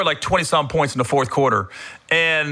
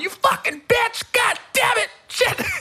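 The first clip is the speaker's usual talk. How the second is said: put-on, very high, furious raging screaming. Recalling the night police came to the hotel room, retelling a furious yell. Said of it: "I'm screaming because you know I'm yelling".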